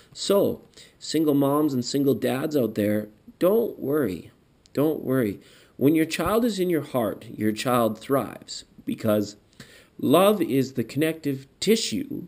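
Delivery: choking up, tearful voice with swooping pitch. Reading a tarot card for single parents, tearing up. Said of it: "I'm tearing up here".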